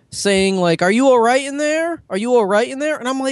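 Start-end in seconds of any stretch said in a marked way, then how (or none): 0.8-2.9 insistent, high, repeated yelling, over and over. Retelling a lady yelling through the bathroom door: imitating a lady yelling. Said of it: "this lady is literally yelling at me through the door".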